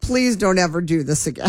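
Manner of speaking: ordinary talk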